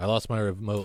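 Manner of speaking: imitated very deadpan delivery. Trying to show another person this guy's odd one-liners, imitating a very deadpan comic. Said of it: "let me see if I can do it".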